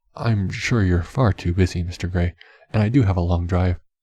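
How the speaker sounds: ordinary delivery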